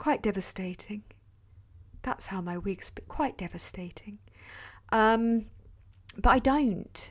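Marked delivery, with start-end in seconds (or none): 0.0-4.2 put-on posh royal voice, lower and quieter. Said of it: "I can do a Princess Diana voice".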